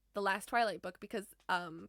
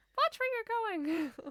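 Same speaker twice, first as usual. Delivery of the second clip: very high, girly put-on girl voice; 14 semitones higher than usual. Retelling a prankster faking a bumped stranger's complaint: high girly voice. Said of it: "doing like a girl voice".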